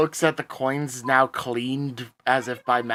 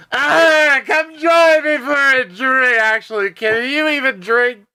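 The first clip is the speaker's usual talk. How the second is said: very loud, very high, shrill, booming, hammered dwarf voice; 12 semitones higher, 8 dB louder than usual. Voicing a dwarf, hammered even by dwarven standards, greeting a friend: drunk dwarf voice. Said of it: "even hammered by dwarven standards".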